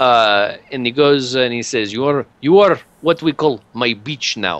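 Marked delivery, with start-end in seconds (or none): 1.9-4.6 put-on Hebrew accent. Voicing an Eldar who claims a player's character: put-on Hebrew-sounding accent. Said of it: "make it a little more Hebrew".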